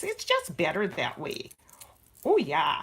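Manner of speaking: sing-song put-on Minnesota accent at full strength. Discussing cooking with garlic, then saying it in a Minnesota accent. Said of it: "In my most Minnesota voice".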